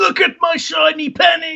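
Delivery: loud shouting.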